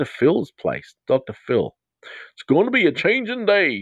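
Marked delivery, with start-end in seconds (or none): 1.1-3.8 awful put-on Texan accent, pitched very high. Answering a listener named Sadie late at night, in a really bad Texan accent. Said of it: "that was a really bad Texan accent".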